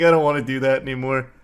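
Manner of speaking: normal talking voice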